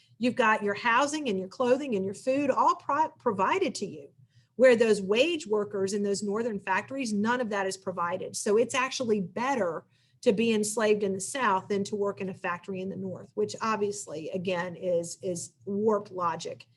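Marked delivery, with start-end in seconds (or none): none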